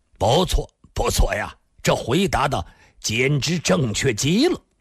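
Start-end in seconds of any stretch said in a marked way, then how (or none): none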